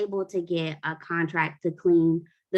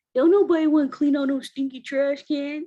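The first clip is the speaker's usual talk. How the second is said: put-on sulky teenage voice, very high pitched; 9 semitones higher, 4 dB louder than usual. Retelling a son's reply to a chore: imitating son's teenage attitude. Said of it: "with all the teenage attitude that you can get".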